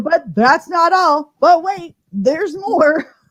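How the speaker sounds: slow TV infomercial pitchman announcer voice. A host hyping prizes to the audience: infomercial announcer voice. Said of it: "I sound like an infomercial".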